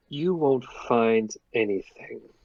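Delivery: whispering with a hiss. Narrator voicing the elf nurse in the back, a hissed whisper. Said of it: "whisper, and then a hiss".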